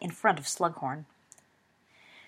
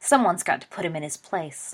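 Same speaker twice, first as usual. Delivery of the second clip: ordinary delivery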